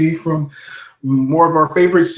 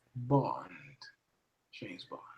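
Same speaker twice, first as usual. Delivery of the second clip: low, very quiet, hushed murmur; 6 semitones lower, 19 dB quieter than usual. [name] answers the host's request with a James Bond impression. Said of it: "give me your best James Bond impression".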